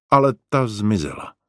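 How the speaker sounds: plain reading voice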